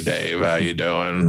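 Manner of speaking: gravelly, rough-textured voice.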